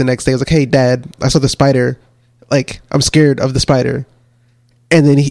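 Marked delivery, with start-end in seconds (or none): none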